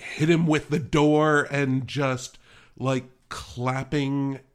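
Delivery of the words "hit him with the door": loud, gleeful, joyful cheering yell. Retelling what a daughter yelled at a wrestling match: imitating daughter yelling. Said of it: "She was yelling".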